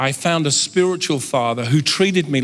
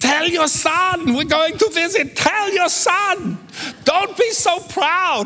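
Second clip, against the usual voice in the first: put-on very high screeching scream with Italian accent. Recounting a phone call, speaker voices their mother in the background: retelling Italian-accented screaming. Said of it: "with her Italian accent".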